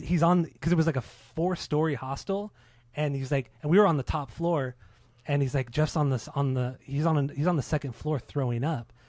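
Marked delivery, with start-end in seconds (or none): none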